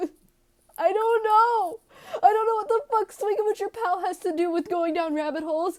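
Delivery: high, loud, put-on tearful sobbing voice. Answering an imagined question from her audience, in a mock-tearful voice. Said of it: "[Tearful Voice]".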